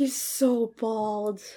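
acted-out, crestfallen, dismayed, disappointed tone. Retelling a girl's remark as Kendall comes out: imitating a dismayed girl. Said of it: "She was so dismayed".

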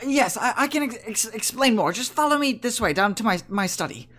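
halting stammer on repeated words. Having locked the door, you tell the visitors to follow you to your study, with a slight little stutter. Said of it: "he has a slight little stutter about him".

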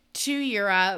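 ordinary talk

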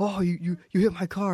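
mock frantic, high-pitched, stammering, freaked-out voice. Retelling a driver's outburst over carts parked by his car, imitating someone freaking out. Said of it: "started freaking out on me".

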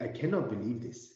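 cartoon lemur king character voice. Retelling a reaction, switching into a new voice: King Julian voice. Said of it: "in the great voice of King Julian".

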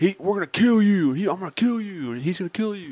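very high, high-pitched hollering, yelled. Retelling what a fighter's buddy yelled at the face-off: imitating someone yelling. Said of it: "yelling all this shit".

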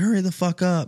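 mock screaming yell at very high pitch. Telling a golf story, the speaker acts out a guy on the tee box, retelling a guy screaming. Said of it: "he's screaming".

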